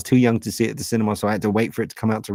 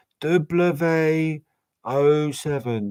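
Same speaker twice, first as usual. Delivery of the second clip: slow, higher, forgetful fumbling, drawn out. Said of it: "I'll be back here going".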